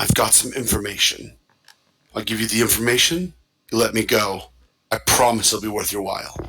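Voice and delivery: quiet hushed whisper. A game master voicing the vampire, turning to the player Glyph: whispering. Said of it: "he turns and whispers to you".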